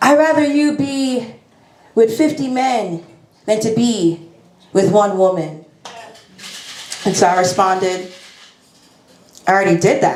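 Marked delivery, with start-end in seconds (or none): 0.0-5.6 put-on Haitian-accented speech. Quoting your Haitian mom's words to you, in a put-on Haitian accent. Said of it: "I'm going to do the accent because".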